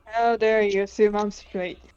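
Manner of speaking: put-on flat deadpan delivery. Retelling a man's reply that made Arata lose it, retelling a deadpan reply. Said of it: "in the most like deadpan tone of voice".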